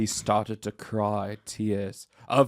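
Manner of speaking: ordinary delivery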